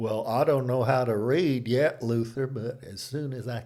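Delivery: put-on rural country Southern accent. Speaker voicing someone who can't read, answering Luther, in a put-on Southern accent. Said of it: "sorry about the accent".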